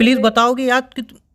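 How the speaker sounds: high, loud yelling, breaking off mid-word. Pressing the other to tell what happened, yelling. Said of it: "I'm sorry चिल्लाने के लिए".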